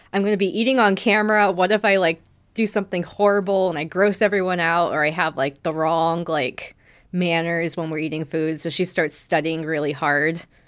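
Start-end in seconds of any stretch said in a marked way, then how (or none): none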